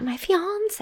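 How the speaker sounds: irritating put-on way of talking. Showing the other speaker how the party guest said it: imitating an annoying way of talking. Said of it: "you should say it like that".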